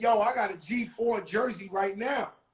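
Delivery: normal talking voice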